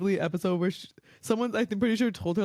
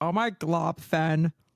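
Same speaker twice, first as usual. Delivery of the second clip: spoiled, bratty put-on princess voice; 3 semitones lower than usual. Going through a list of characters, the speaker imitates one: Lumpy Space Princess impression. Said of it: "Let me do an impression".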